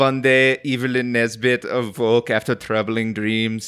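thick, heavy, laid-on put-on German accent. Imitating the narrator's voice: heavy German accent. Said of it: "It has a heavy German accent. So it'd be like".

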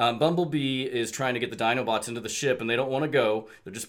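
ordinary delivery, nothing marked

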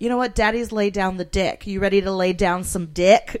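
very loud delivery. Retelling what a man said back to a guy on a patio, very loud. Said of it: "Like so loud".

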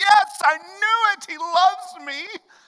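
mock excitement, very high pitch and very slow. Retelling a woman picking petals until the last says he loves her, acting out someone's excitement. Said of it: "And she's all excited".

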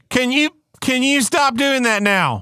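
put-on megaphone announcer voice. Mocking a responder who talks to a shooter: mock bullhorn announcement. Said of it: "gets over a bullhorn".

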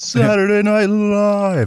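bad, high announcer voice, "live" drawn out. You say you can't do it today, then try anyway: a failed Don Pardo impression. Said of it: "I can't do it today".

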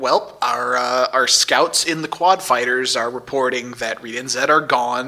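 ordinary delivery

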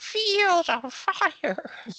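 put-on very high, slow little baby voice. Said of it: "he did the Field of Fire as Shivers".

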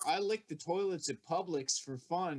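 normal talking voice

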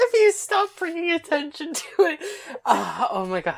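very high voice, words breaking into laughter. Asked to compose herself long enough to vote, laughing while talking. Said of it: "can you compose yourself for long enough to vote?".

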